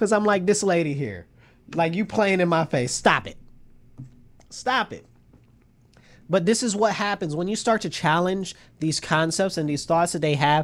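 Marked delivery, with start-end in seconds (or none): 0.4-5.0 put-on disdainful tone. Retelling own reaction to a woman in a debate: retelling own disdain. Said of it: "with complete disdain".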